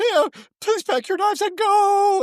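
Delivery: put-on teary, very high-pitched tearful voice. Imitating a judge sending a contestant home: imitating Kristen crying. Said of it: "Kristen will cry at the drop of a hat".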